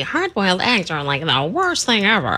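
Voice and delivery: swooping, animated natural speaking voice. Retelling what a co-host just said on air: imitating a co-host. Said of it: "that's your imitation of me?".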